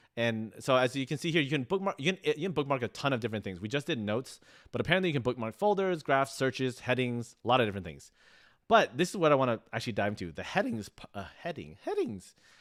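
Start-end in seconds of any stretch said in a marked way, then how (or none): 10.3-12.4 soft voice breaking and cracking on the word. Showing bookmark features in a tutorial, voice cracking. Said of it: "My voice cracked".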